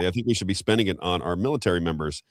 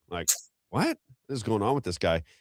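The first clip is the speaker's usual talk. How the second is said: ordinary talk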